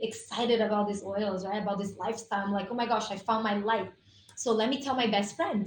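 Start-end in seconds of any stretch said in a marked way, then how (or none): none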